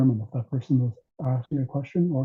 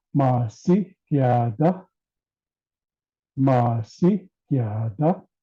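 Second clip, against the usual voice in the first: pitch swooping up high on masiyada; 4 dB louder than usual. Explaining tones in a language, speaker demonstrates a question with rising pitch. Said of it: "I'm going up a lot higher".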